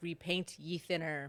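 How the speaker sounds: normal talking voice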